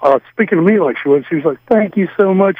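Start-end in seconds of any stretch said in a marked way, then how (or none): 1.7-2.6 high voice, on the verge of tears. Retelling a coworker's Monday phone call: imitating someone almost crying. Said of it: "She's almost crying".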